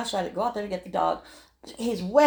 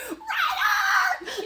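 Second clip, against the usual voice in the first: put-on yell, pitched higher. Retelling calling a dog from the window: retelling a shout out the window. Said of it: "I'm screaming out the window".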